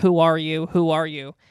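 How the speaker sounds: ordinary talk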